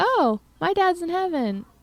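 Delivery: tiny, sweet little voice, very high. Retelling a child's words at a parent-teacher conference: imitating George's sweet little voice. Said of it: "in this sweet little voice".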